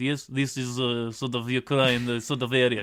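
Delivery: clumsy, bad, fake Eastern European accent. Showing how to do a polish accent, speaking in a bad eastern european accent. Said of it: "I'm doing a bad Eastern European accent".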